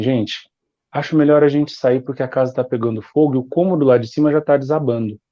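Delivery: calm, patient, even voice. Describing an extremely calm woman warning people about a fire, imitating her super quiet calm voice. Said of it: "num tom de voz super baixo".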